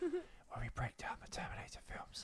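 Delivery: hushed voice. Opening an episode in the middle of the night: whispering. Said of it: "Why are we whispering?".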